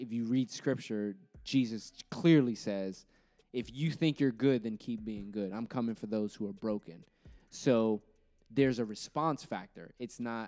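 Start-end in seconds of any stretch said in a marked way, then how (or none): none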